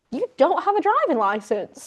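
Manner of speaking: alarmed, high, swooping, concerned disbelief. Retelling how the driver reacted on learning a teammate had no licence: imitating Max Verstappen freaking out. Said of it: "freaking out, concerned for this boy".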